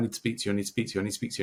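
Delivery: rushed, fast, run-together, rattled-off speech. Retelling a stranger who came up outside a london bar: imitating really fast speech. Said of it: "he was like speaking really fast".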